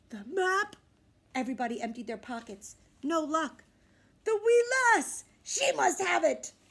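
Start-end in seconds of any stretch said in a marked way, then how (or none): 4.2-6.5 high, hollering pirate captain voice. Braidbeard, searching with his crew for the missing map, hollering. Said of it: "Braidbeard hollered".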